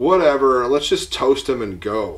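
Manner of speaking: put-on heavy American accent, laid on. Recounting voices heard, speaker quotes a guy in a thick American accent. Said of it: "like a guy with a thick American accent say".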